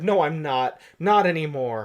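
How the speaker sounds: ordinary talk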